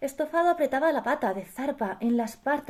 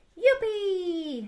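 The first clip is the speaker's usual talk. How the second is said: high, drawn-out, gleeful, joyful shout of delight; 7 semitones higher than usual. A character cheers when the wolf proposes inviting the rabbits over, shouting with joy. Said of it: "Gritó Estofado con alegría".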